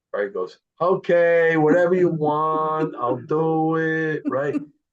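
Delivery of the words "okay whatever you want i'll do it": high, very slow, put-on accented drawl. Telling a story, quoting Barry's reply to Tommy, imitating Barry's accent. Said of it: "good accent".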